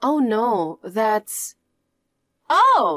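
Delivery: very slow, stunned, shocked delivery. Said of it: "you sound shocked".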